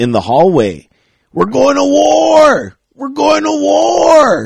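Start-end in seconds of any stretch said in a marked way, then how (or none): 1.3-4.5 put-on very high, hoarse, drawn-out drunken scream. Recalling a drunk guy bursting into the hallway, imitating Manny screaming. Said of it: "he just comes like like screaming".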